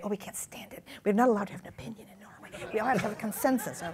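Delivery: put-on whisper. Quoting what people in norway say, retelling it in a whisper.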